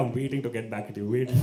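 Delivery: ordinary talk, nothing marked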